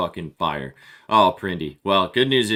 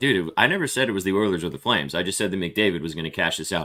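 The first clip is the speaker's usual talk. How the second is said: ordinary delivery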